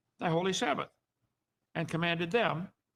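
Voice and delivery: ordinary talk, nothing marked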